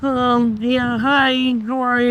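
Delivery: very high, slow, dorky nerd voice. Asked for an impression of a geek or dweeb type: nipple impression. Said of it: "And now give me a nipple impression".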